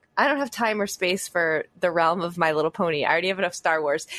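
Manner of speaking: ordinary delivery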